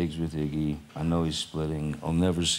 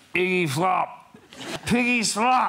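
play-acted, very high, stretched-out, taunting yell; 4 dB louder than usual. Retelling being drunk and screaming a taunt: imitating own screaming. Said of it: "and I just started screaming".

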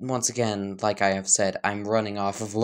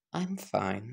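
flirty, flirtatious tone, quieter; 8 dB quieter than usual. Reading a scene where a character leans closer to someone: flirtatious tone. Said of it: "say in a kind of flirtish manner".

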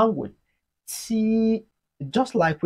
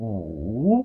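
wu dips low, then climbs: falling-rising tone; 8 semitones lower than usual. Repeat-after-me Chinese lesson on the third tone: falling-rising tone on wu. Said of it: "It has the falling rising tone".

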